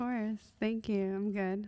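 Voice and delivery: speaking softly. A podcast guest answering the host's welcome, in a soft voice. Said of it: "we're not going to do that soft voice".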